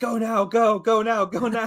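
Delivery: very high, loud, hollered shout. Narrating what Dave does in the scene, retelling Dave's shout. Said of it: "as Dave shouts".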